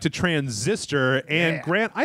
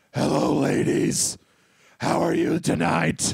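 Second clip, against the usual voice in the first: rough, creaky, raspy voice going for sexy; 2 semitones higher than usual. Host showing off a voice to the other host: sexy Batman voice. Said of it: "listen to my sexy voice".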